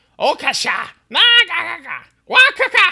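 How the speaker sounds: very high, very loud, shrill, swooping angry lizard yells. A game master voices lizard folk confronting the players, angry lizard-creature voice. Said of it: "raise his sword at you angrily".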